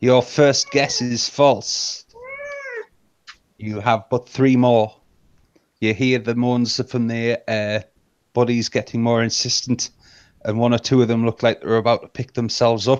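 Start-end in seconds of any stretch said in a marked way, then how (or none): 0.0-5.0 ominous, sinister, taunting tone with swooping pitch. A game master voices a mysterious voice answering a player's guess, booming sinister voice. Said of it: "The booming voice comes back in the sinister laughter and says".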